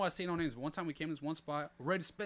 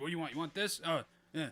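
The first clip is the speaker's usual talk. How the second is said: play-acted rude, nasty attitude. Retelling how workers at a shop treated customers: imitating a rude, nasty worker. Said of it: "What kind of accent is that?".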